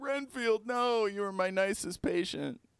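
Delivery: mock crying voice, very high and tearful. Imagining the comedy orderly saying goodbye to Renfield, mock crying. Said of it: "he might break down crying and be like".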